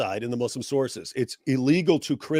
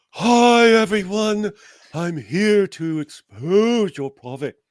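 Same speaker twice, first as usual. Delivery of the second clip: loud, calm, soothing, pitched up; 7 semitones higher, 5 dB louder than usual. Guessing what the other person's yelling voice sounds like, in a louder, soothing voice. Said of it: "a louder, calming, soothing voice like".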